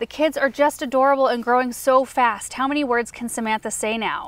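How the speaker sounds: ordinary talk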